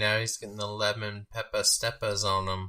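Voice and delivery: plain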